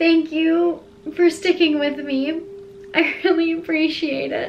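speaking through tears, tearful and crying. Thanking the audience for sticking around during healing, crying. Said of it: "I can't believe I'm crying".

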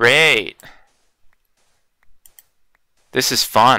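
sarcastic tone, cheerful on the surface. Playing a game after some sand collapsed and hid their spot; sarcastic. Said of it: "I was being sarcastic when I said it was fun".

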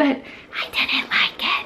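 slow, soft, unvoiced secretive whisper.

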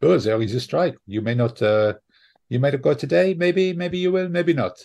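put-on French accent. Retelling what the ferry guy said about the strike, in a put-on French accent. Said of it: "If you do that accent again".

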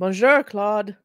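bad put-on French accent. Greeting Claude by name: terrible French accent. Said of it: "My terrible French accent".

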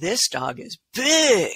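eager, emphatic, excited, high and swooping. Reading a sentence aloud to show how an exclamation sounds, excited. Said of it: "the explanation means we get excited about it".

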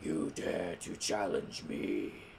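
very low, slow, drawn-out, cool voice. Retelling a Pokemon movie, the speaker does Kyurem's cool deep voice. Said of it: "He's got that cool, deep voice".

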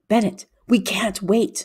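half-whispered. A narrator reads the first-person hero urging Bennett at the dark bridge, half-whispering. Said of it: "I whispered".

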